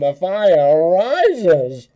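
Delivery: muffled through a mug. Showing a buddy a trick with his dad's mug, the speaker speaks muffled into a mug. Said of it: "put it up to your mouth".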